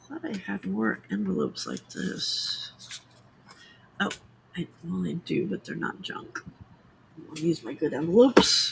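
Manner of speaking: soft, breathy, whispered mumbling under the breath. Looking through envelopes, mumbling to oneself. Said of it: "I'm mumbling to myself".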